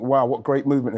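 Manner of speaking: ordinary talk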